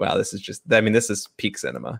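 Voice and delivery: ordinary talk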